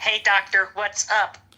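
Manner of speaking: slow, drawn-out phone voice-assistant voice. Imitating the AI voice that just spoke: imitating Siri voice. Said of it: "Except it was Siri. It was like".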